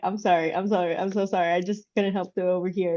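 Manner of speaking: laughing while speaking. Retelling a customer's apology after overhearing a story: imitating someone laughing while apologizing. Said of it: "just her bursting out laughing".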